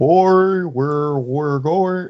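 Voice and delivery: put-on early cartoon voice. Describing an early episode, imitating the old school Homer Simpson voice. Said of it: "that old school Homer voice".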